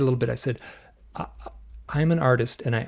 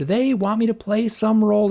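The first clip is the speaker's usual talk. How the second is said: much higher scream; 7 semitones higher than usual. Speaker retells what he screamed when asked why he was so emotional: retelling a scream. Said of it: "And I screamed".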